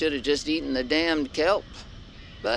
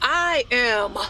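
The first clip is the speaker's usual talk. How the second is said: with conviction, higher pitch; 8 semitones higher, 3 dB louder than usual. Answering a repeated demand to say it like you mean it. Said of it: "I said like you mean it".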